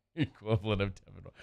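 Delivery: soft voice breaking into laughter through the words. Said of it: "say it without laughing".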